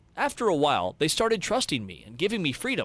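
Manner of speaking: ordinary talk, nothing marked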